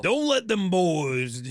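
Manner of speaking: high-pitched, slow drawl with every word stretched out. Voicing the Pumpkinhead, drifting into a little Randy Savage. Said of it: "That was a little Randy Savage".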